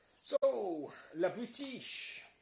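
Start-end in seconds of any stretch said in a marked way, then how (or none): 1.2-2.2 very high, loud, shrill put-on French accent. Saying a name in a French accent. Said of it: "in a French accent".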